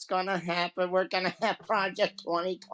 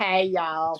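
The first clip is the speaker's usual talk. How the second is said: put-on Southern US accent; 5 dB louder than usual. Doing a congresswoman's voice, in a put-on southern us accent. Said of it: "That's how I get the southern accent".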